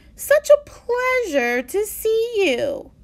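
fake, over-the-top cheerfulness. The principal opens his office door to greet Benjamin, with obnoxiously forced enthusiasm. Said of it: "with what was obnoxiously forced enthusiasm".

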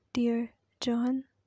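ordinary delivery, nothing marked

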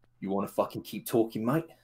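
put-on Australian character voice. [name] answers from the other end after a chair clatters, as [name] in Australian accent. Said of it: "Why did he go Australian then?".

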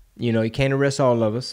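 plain

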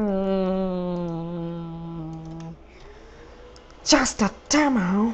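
very slow, soft, drawn-out, unimpressed, dismissive "hmm". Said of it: "all of a sudden they're like".

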